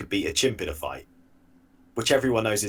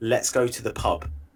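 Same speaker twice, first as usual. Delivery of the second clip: ordinary talk, nothing marked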